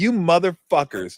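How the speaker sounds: harsh ranting, scolding delivery. Retelling a halftime talk after a bad first half: imitating coach Nelly's halftime rant. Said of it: "he just looks at it and goes".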